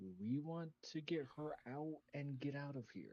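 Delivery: hushed, quiet half-whispered aside. In character, a player in a crowd speaks to the rest of the party: half-whisper. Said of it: "I'm gonna whisper uh, to the rest of the party".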